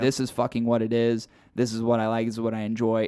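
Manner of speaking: plain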